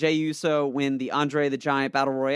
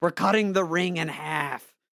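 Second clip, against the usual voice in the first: light, mild, half-yelled rousing call; 3 semitones higher than usual. Retelling what a wrestler yelled during a match: imitating Woods yelling. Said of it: "Woods actually yelled at one point".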